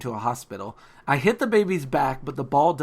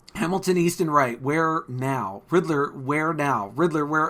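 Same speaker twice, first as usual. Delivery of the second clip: ordinary talk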